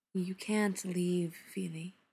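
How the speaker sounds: quiet volume, soft. Reading a story, Dis answers Feely, quietly. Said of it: "Dis says quietly".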